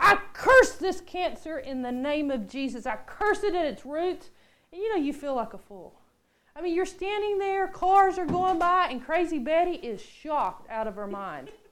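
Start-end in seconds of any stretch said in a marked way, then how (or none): 0.0-4.3 mock shout at the top of the lungs, booming, very loud. Retelling laying a hand on a woman outside an apartment complex, retelling a very loud shout. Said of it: "with the loudest voice".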